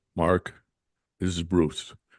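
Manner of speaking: very deep, low voice. Retelling a phone call where Bruce introduces himself, in Bruce's very deep voice. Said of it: "Bruce has got a very deep voice".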